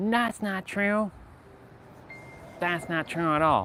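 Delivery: mock sarcastic, high-pitched voice. Speaker mimicking people who dismiss what was just said: mocking mimicking voice. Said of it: "I'm using that voice as a as a mimicking technique".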